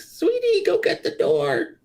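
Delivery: put-on tiny little old voice, very high pitched. The narrator voices someone answering from behind the barn door: small, elderly voice. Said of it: "you hear from inside a small, elderly voice".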